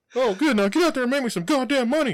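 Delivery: very high-pitched and loud voice. Retelling Mickey Mouse beating up a Jonas brother: Mickey Mouse voice. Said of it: "and he's like".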